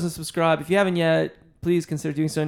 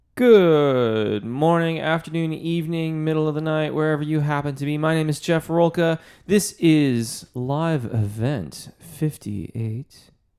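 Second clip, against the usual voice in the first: a low, on-air radio announcer voice. Opening a weekly live event and greeting the audience, in a radio voice. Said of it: "That's my radio voice".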